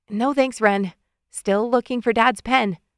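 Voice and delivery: ordinary delivery, nothing marked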